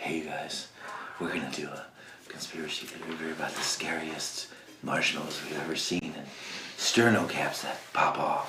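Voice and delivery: very quiet, hushed, soft, eerie, spooky storyteller voice. Imitating a YouTuber's conspiracy video intro: imitating Shane Dawson's voice. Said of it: "He's like".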